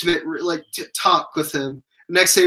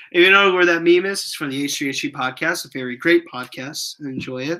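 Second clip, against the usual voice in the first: ordinary delivery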